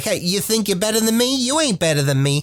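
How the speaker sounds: Brooklyn-style accent in a gnome voice. Imagining the voice a gnome would have, Brooklynish gnome accent. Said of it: "a Brooklynish kind of accent".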